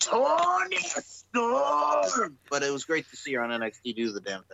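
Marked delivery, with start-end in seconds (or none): 0.0-2.4 put-on very high angry Scottish accent, "storm" stretched out. Imitating how a ring announcer calls a wrestler's name: angry Scottish accent. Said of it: "to hear Kaylee Ray go".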